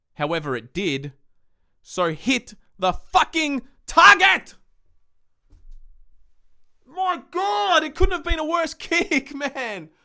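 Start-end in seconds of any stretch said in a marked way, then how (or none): 1.9-9.9 very high, shrill, drawn-out angry scream. Reacting to McGovern's last kick missing the target, screaming. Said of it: "I'm sorry for screaming".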